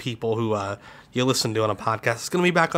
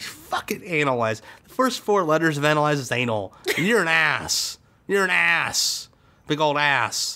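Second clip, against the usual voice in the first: mock furious cursing rant, higher pitch; 4 semitones higher than usual. Cussing out a listener who left a review as promised: mock angry cussing out. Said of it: "I'm so mad right now".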